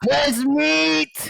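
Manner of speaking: shouting. Calling out in character inside a cave, yelling. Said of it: "I'm going to yell".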